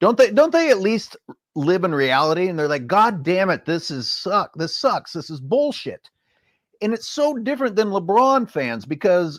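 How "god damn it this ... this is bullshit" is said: put-on angry screaming, pitched higher. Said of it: "yell and scream like".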